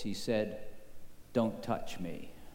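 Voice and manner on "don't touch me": low, soft, flat monotone voice. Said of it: "flat, monotone voice".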